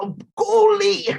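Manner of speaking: heavy put-on brogue, very high pitch. Talking about British actors' accents, imitating an actress in a thick brogue. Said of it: "She's like a thick brogue".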